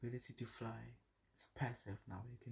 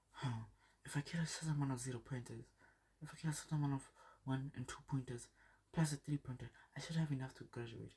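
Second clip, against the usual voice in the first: nerdy mumbling, as if to oneself; 2 semitones higher than usual. Retelling the scene where Deku sits alone, Deku mumbling to himself. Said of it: "he's mumbling to his head".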